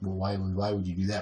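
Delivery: put-on disappointed tone. Recalling a childhood mishap, quoting how he asks questions, imitating his disappointed tone. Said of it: "the same disappointed tone he gets".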